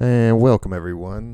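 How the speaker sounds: booming, very loud voice. Welcoming everyone to the podcast, kind of loud. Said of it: "sorry, I'm kinda loud".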